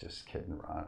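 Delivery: hushed, whispered. Adding a quick joking aside to ron: whispered. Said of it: "I whispered it".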